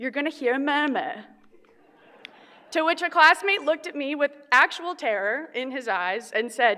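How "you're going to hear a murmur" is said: put-on broad, heavy, thick British accent. Retelling what the nurse running a simulation said: thick British accent. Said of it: "in a wonderful, thick British accent said".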